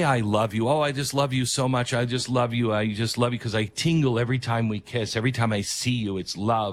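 normal talking voice

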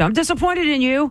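shrill, full-voiced, loud scream. Retelling what your mother said as you left for a tattoo: retelling a mother's scream. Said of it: "my mother screamed".

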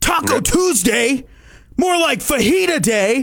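irate, deliberate, high, drawn-out delivery. Saying the same phrase in different emotions, starting with an angry delivery. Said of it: "I'm going to start off with the first angry".

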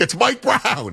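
yell blurted out without thinking. Recounting spotting the Knicks head coach, the speaker retells yelling to their fiancée. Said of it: "I'm yelling at my fiance".

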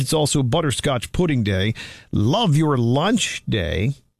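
ordinary talk

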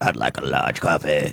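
very deep voice spoken on the in-breath. Showing the others how a man orders coffee, imitating him talking while inhaling. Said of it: "Watch, I'll do it for you".

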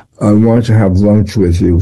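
ordinary delivery

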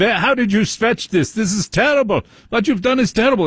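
mock yelling in put-on German accent. Retelling how a foot surgeon scolded him after he stretched, retelling a yell, fake German accent. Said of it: "pretend to be German".

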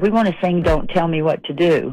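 ordinary talk

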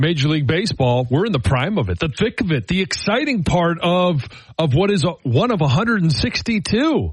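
mock-enthusiastic sarcasm. Describing the baseball season to a co-host: heavy sarcasm. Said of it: "I hope you can feel the heavy sarcasm".

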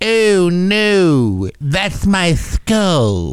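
"no" stretched out with a drooping pitch. A friend asks for the Droopy impression; answering in a Droopy impression. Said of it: "Do the droopy impression".

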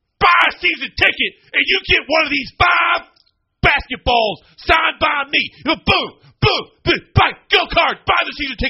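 angry, aggressive, pushy sales-pitch voice. Retelling a video asking fans to buy season tickets: imitating an angry Pat Kelsey. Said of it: "he's so angry in this video".

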